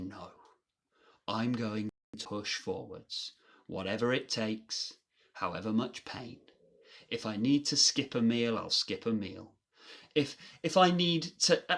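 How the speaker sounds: ordinary delivery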